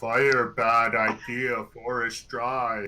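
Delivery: put-on sloppy, slurring drunken voice. A speaker offers a suggested line in their best drunken voice. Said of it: "in my best drunken voice".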